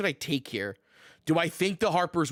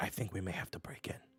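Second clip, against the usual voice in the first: speaking in a lowered voice; 8 semitones lower, 13 dB quieter than usual. Playing a character who speaks to his group; lowered voice. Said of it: "Shiner like lowers his voice".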